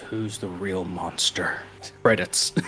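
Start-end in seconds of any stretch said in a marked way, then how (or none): 0.0-1.6 low, very quiet, flat, barely voiced deadpan. Pitching a scene where the Witcher kills the guy in the costume: mock-deadpan as the Witcher. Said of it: "looks deadpan into the camera and goes".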